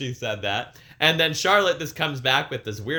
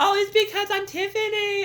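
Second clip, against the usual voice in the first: very high squeaky voice. Retelling a promo imitating how Tiffany talks: high-pitched squeak imitating Tiffany. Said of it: "that high-pitched squeak".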